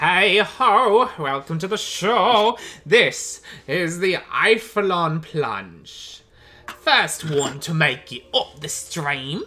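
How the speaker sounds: loud, slow goblin announcer voice. Voicing a goblin on the dock announcing the race: voicing a goblin announcer. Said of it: "He goes".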